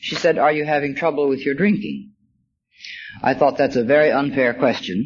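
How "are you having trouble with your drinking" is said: put-on very soft, hushed voice. Recalling a woman who sneaked up behind the speaker, quoting her: quoting her very soft voice. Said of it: "said in a very soft voice".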